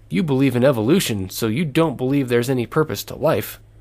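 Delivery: ordinary talk, nothing marked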